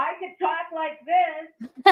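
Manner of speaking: full-on scream, very high, very loud, drawn-out. Testing a call-in phone line after being asked to scream: screaming. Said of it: "Can you start screaming so that we can tell?".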